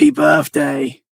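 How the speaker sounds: loud, ghastly, ugly put-on voice. Retelling a voice she heard say happy birthday, in a horrible voice. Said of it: "like like a horrible kind of voice".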